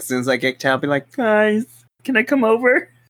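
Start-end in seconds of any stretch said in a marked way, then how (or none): 1.1-2.8 high, sweet, hopeful pleading voice.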